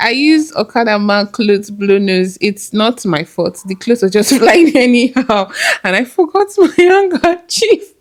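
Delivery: words broken up by laughter throughout. Speaker retells what they said, laughing while talking. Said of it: "I'm sorry, I'm laughing".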